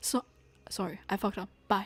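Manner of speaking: nonchalant offhand tone. Mocking how casually a line was delivered: imitating Daya's nonchalance. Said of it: "It's as nonchalant as Daya's".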